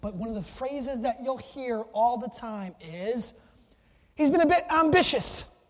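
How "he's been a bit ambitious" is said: terrible put-on English accent, pitched up. Quoting a Premier League announcer's favorite phrase, in a bad English accent. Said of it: "I have a terrible English accent".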